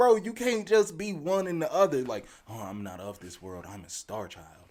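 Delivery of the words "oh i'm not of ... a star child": mock lofty guru voice, lower and quieter. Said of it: "they start talking in this real lofty voice".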